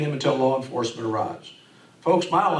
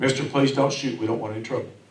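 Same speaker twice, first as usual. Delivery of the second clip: ordinary talk, nothing marked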